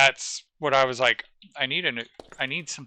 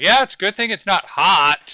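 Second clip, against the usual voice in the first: mock, very sarcastic, pitched-up delivery; 6 semitones higher, 7 dB louder than usual. Retelling the boss's remark about the heat: imitating a sarcastic boss. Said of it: "My boss was even being very sarcastic".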